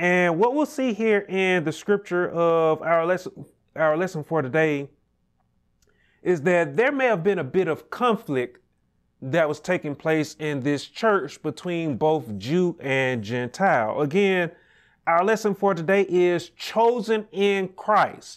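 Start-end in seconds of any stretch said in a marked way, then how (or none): 15.0-18.4 the word chosen stressed hard and said high. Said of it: "I want to put emphasis on that word chosen".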